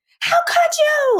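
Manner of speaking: put-on hollering. Retelling a partner's angry phone call: imitating someone hollering. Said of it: "she's hollering in my ear".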